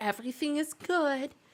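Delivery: tiny, soft, half-whispering stage whisper. Imitating what a lady would say, imitating her little half-whispering voice. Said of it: "in her little whispering voice".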